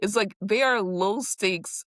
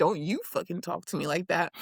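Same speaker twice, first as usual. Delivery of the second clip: usual speaking voice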